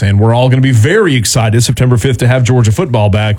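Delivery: normal talking voice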